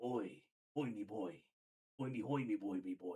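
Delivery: low-pitched, rusty, creaky babbling voice. Describing how the character Butcher always sounds, Butcher impression, rusty DoodleBob. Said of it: "his voice is just sounding like a, a like a rusty doodle bob".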